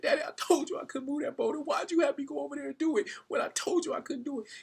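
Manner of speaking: put-on high, tearful, sobbing child's voice. Retelling a son who, crying, asks his father why: acting out a crying son.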